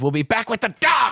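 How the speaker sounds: very high, spooky, menacing, scary voice. Quoting the way a man in a movie says a line, imitating a scary voice. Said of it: "It's a scary voice".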